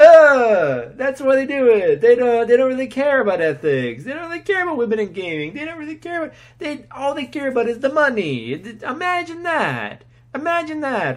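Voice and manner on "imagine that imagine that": high, drawn-out, cartoonish Italian accent, words stretched. Speaker ranting about big business, slipping into a Mario voice. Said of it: "Why do I sound like a Mario now?".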